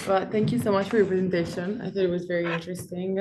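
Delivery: speaking very fast, rattled off.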